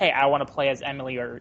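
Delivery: normal talking voice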